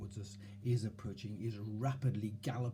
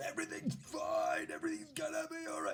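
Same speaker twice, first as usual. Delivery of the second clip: shrill, high-pitched shout. Explaining how not to reassure yourself, showing what you wouldn't do: yelling. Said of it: "you wouldn't yell".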